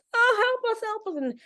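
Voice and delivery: very high, sobbing, desperate wail. Speaker acting out crying people running into someone: imitating people crying. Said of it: "people won't stop crying".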